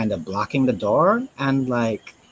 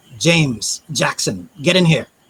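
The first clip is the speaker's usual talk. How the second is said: loud calling out; 3 semitones higher, 5 dB louder than usual. Voicing a character calling the guards in from the catacomb: yelling back. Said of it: "he's gonna yell back".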